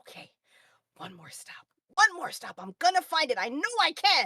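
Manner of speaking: put-on sad child voice. Voicing a young girl who takes a breath and nods: slightly sad eight-year-old voice. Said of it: "So she gets a little sad for a second".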